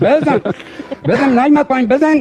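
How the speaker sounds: shouting, pitched high. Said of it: "داد زدی که بابا بزن".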